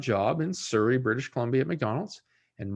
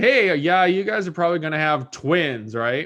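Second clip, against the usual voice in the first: put-on teasing, loud sarcastic jab; 3 semitones higher, 7 dB louder than usual. Retelling what was said when the parents announced big news: retelling own sarcastic remark. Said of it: "I was sarcastic and said".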